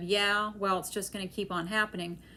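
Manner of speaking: normal talking voice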